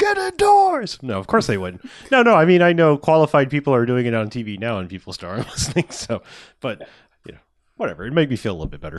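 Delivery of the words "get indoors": screaming, much higher in pitch and louder. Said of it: "on the corners with the sign screaming".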